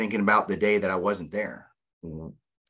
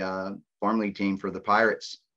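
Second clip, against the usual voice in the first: normal talking voice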